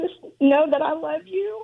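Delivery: on the verge of tears. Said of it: "Don't cry".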